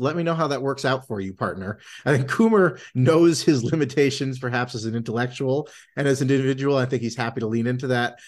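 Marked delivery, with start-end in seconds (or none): 0.0-1.8 mock dry deadpan delivery, faster. Retelling someone's reply at the end of a game, imitating a dry remark. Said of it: "pat kind of dryly goes".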